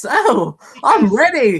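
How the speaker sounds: high, pushed-up voice with cracks. Doing a clone commando voice with added voice cracks: Gregor voice with voice cracks. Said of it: "clone voice like this and just add some, uh, voice cracks".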